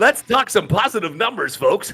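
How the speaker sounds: high, put-on, fake-cheerful, relentlessly positive voice. Showing how they must talk on Zoom calls with American friends: put-on upbeat camera-face voice. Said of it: "you gotta do that kind of talk".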